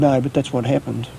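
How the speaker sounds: plain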